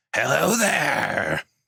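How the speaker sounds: thick, heavy, rough, rasping, creaky ghoul voice. Narrating a scene, the ghoul holding the reins calls out in a very heavy ghoul voice. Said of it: "calls out in a very heavy ghoul".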